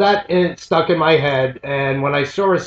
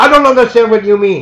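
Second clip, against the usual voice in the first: heated, shrill, loud yelling; 6 semitones higher, 7 dB louder than usual. Retelling an argument in a falafel place, quoting the guy: imitating a man yelling. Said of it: "He is now yelling".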